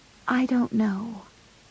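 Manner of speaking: hushed, very soft, barely audible voice. Meg answers John, who must move closer to hear her: very softly. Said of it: "so softly that John had to move closer to hear her reply".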